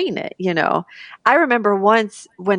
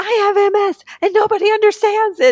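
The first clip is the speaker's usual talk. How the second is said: very high, top-of-the-lungs full scream; 12 semitones higher, 4 dB louder than usual. Telling how she vented in front of her girlfriend, retelling her own scream. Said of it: "screaming at the top of my lungs".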